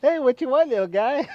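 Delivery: put-on very high, loud, cooing baby talk. Answering a scam call as if the caller were your dog, baby talk to a dog. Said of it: "just act like they're your dog".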